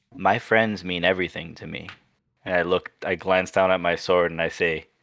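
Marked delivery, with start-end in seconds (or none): 0.2-1.9 hushed whisper. In a role-play scene, speaking to a companion so nobody else can hear, whispering. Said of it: "I whisper to her so nobody else can hear".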